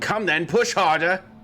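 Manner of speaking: rough, gruff, high called-out voice. Game master voices someone the players hear from nearby, gruff yelling voice. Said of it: "you hear a gruff voice yelling".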